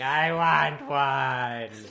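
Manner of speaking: mock, very loud, long, tearful crying wail. Retelling how she cried at Mass: imitating someone crying. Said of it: "she was crying, going".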